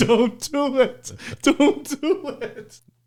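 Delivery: put-on weepy, tearful begging, very high, very slow. Retelling watching a painful movie scene: imitating own crying plea. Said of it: "I'm crying watching it like".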